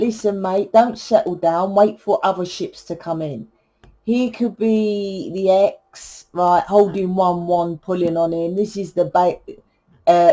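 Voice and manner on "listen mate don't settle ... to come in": ordinary talk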